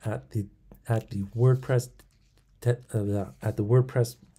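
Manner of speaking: stuttering, tripping over words. Naming the back end of WordPress while tripping over words: stuttering. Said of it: "stuttering, it's weird".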